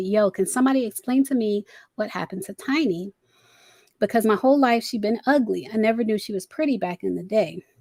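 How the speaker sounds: ordinary delivery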